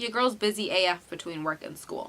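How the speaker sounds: ordinary delivery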